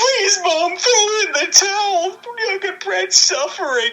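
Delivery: very high-pitched, tearful, crying, pleading voice. Retelling a wrestling match finish, imitating Owen Hart crying. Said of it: "And Owen is crying".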